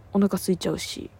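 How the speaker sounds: usual speaking voice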